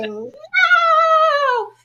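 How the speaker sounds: put-on very high, stretched-out scream. Retelling lying on the floor beside the student: imitating own screaming.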